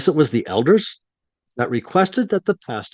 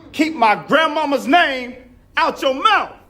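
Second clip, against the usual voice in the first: put-on parody voice, pitched higher; 13 semitones higher than usual. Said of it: "the takeoff of [name]".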